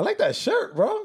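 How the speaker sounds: very high, excited, hyped squeal.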